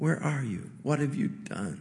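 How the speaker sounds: very soft, quiet, grieving, heartbroken fatherly tone. Speaker voicing God calling to Adam as he hears it: acting as a heartbroken father. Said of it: "I hear the tone of voice of a heartbroken father".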